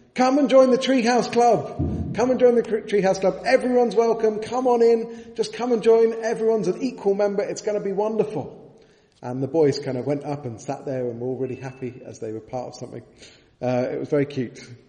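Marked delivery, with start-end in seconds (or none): 0.1-8.5 put-on high, loud shout in a little-girl voice. Retelling a park visit, a girl at the top of the stairs: imitating a girl shouting. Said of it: "this girl was standing at the top of the stairs shouting".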